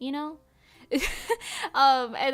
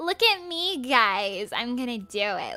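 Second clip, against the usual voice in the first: put-on slow, drawn-out, boastful girl's voice; 2 semitones lower than usual. Retelling a girl bragging before chopping firewood: imitating how she talks. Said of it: "Like, she talks like that".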